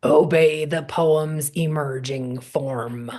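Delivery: very gruff, low and very slow. Recalling what your beloved mentor used to say, do Jack's very gruff voice. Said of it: "used to say in a very gruff voice".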